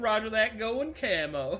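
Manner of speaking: put-on Southern trucker accent. Voicing a character in the game after announcing it: Southern trucker accent. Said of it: "Southern trucker".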